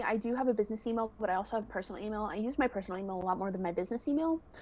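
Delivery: rattled-off, way too fast talking. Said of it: "I'm talking way too fast".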